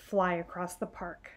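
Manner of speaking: plain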